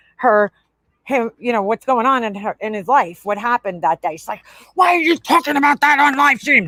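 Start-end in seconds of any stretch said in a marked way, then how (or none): 4.8-6.7 high, put-on scolding yell. Retelling how a streamer yelled at her kid, imitating her yelling. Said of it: "she's yelling at the kid".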